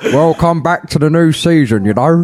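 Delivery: put-on New Zealand accent impression. A podcast co-host welcomes listeners back as Ron Harris: Ron Harris impression, Kiwi twang. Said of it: "With a Kiwi twang".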